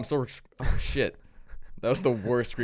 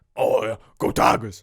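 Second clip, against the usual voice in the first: loud college football coach impression voice; 6 dB louder than usual. Imitating the LSU coach after being asked to: Coach O impression. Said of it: "Can you imitate him?".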